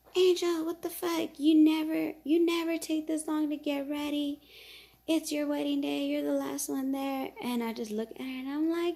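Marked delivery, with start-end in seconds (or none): 0.1-7.2 acted all-out scream, high-pitched. Retelling how the groom's mom reacted to the delay: imitating mom screaming. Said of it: "his mom starts screaming".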